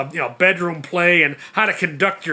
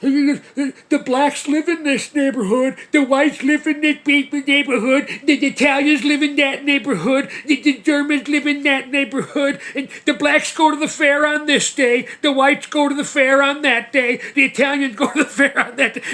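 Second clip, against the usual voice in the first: play-acted taunting, derisive, very high-pitched ranting; 9 semitones higher than usual. Retelling how the speaker mocked an argument, imitating a mocking rant. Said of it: "I mock him".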